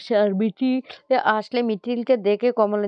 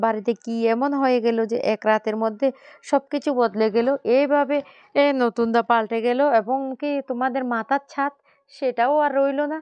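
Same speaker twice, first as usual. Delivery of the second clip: ordinary delivery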